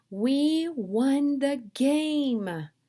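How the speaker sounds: very slow excited voice. Showing how to read a sentence ending in an exclamation mark, excited, voice rising. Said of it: "My voice goes up and I get excited".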